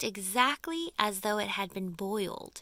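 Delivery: plain reading voice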